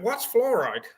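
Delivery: plain put-on British English accent. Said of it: "she goes in the British accent".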